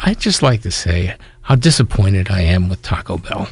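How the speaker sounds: sugary, sweet, innocent butter-wouldn't-melt voice. Retelling what a woman said when she stood up at a meeting, mock sweet, innocent voice. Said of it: "in this sweet, innocent voice".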